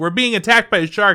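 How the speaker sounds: high, loud, alarmed, panicked yell. Retelling what the speaker yelled back to someone asking why they were yelling, imitating yelling. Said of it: "Why are you guys yelling?".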